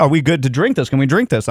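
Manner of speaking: ordinary talk, nothing marked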